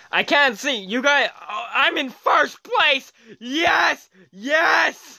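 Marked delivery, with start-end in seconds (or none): 1.5-5.0 loud, excited shouting.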